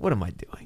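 whispered, self-doubting aside. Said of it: "then I'm like".

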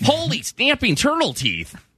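very high, swooping, sing-song Midwestern lilt. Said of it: "do Midwest".

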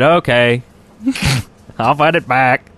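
put-on English spoken with a Swedish accent. Retelling Notch's reply to a fan's tweet, in a Swedish-accent Notch impression. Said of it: "That's what he sounds like".

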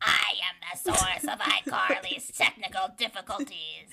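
mischievous, creepy, distorted horror villain voice. Coaching a co-host on how to do the voice, demonstrating a Jigsaw voice. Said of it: "try to do like his voice thing".

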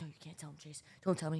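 very quiet, hushed, frightened whisper. Retelling a scared plea not to tell anyone: imitating own past whisper. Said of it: "whispering to Chase".

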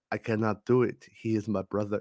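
put-on English delivered in an Indian accent. Pointing out how Obi-Wan sounds in Revenge of the Sith, imitating his Indian-sounding accent. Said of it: "It sounds like he's from India or something".

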